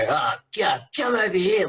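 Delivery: very high-pitched, really bad Australian accent. Retelling how others imagined a toy character: bad Australian accent. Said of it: "a really just bad Australian kind of accent".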